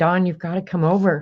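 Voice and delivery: put-on sobbing, bawling voice. Retelling a phone call to a brother after a death: retelling own sobbing plea. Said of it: "I called my brother bawling".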